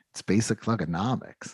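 play-acted dead-straight, utterly unbothered bone-dry deadpan. Retelling a coworker's reply to a question, imitating a dead straight face. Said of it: "his face was so straight".

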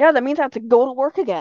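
ordinary talk

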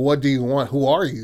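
mock panicked, loud, terrified screaming. Retelling a story of a man who sees a shadow in his room, retelling a scream. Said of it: "he's like screaming out like".

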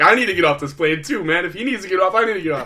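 high, loud, breathless panicked gasping, hyperventilating. Retelling their own reaction on a plane next to a claustrophobic passenger, retelling hyperventilating. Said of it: "I'm like hyperventilating".

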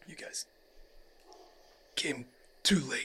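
faint, breathy whisper of a dying man. Narrating a scene, voicing a human grasping for his life, a dying man. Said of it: "You actually see a human that is kind of grasping for his life".

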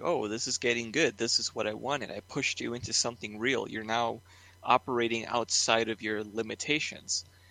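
ordinary delivery

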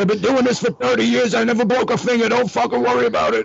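acted, very high, heated, shrill, raspy yelling. Retelling yelling back at the production manager, retelling a yell. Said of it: "And I yelled back".

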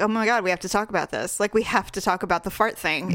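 plain

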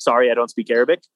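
ordinary talk, nothing marked

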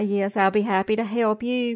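put-on nice, polite Southern manner. Retelling a reply to a client in a nice southern way: imitating own nice southern manner. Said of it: "In my nice Southern way".

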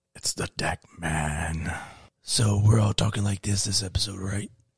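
hushed, soft superhero voice with drawn-out "man". A co-host introduces the special guest, in a Batman voice. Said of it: "Why are y'all doing Batman voice?".

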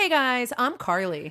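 strongly nasal voice. Speaker greets the guys and introduces herself, very nasal. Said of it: "That was very nasally".

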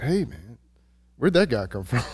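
put-on whisper. Retelling a whisper to a friend about a man by the pond: retelling a whisper. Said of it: "I whispered to my".

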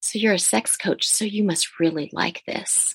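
mock whispering. Retelling what a stranger at a bar said: imitating someone whispering. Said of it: "someone whisper in my ear".

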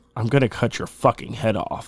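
put-on ominous voice. Speaker retelling a death threat someone sent, retelling an ominous threat. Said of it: "they said in an ominous voice".

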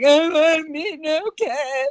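very high, very slow crying wail. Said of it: "start bawling".

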